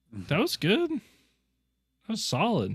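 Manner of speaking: really high-pitched, swooping voice. Speaker praising the listener's Exquisite Doodle, in a really high voice. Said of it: "Your voice is really high when you say that".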